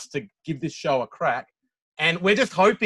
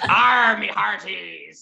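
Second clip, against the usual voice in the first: raspy, rough, creaky sea-dog pirate voice; 4 semitones higher than usual. Show guest, asked for a pirate impersonation before leaving, pirate impersonation. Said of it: "can we just get one pirate impersonation".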